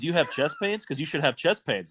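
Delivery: normal talking voice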